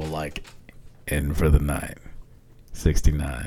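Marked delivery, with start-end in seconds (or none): 1.1-3.5 low, soft, sensual deep voice. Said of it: "I'm gonna come to you very sensual".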